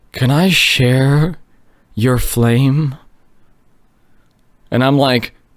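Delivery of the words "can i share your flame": slow, eerie, unsettling, really creepy voice. Retelling what a woman at their fire asked, imitating a really creepy voice. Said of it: "in like a really creepy voice".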